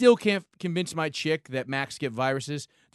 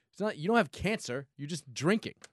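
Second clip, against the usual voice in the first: ordinary delivery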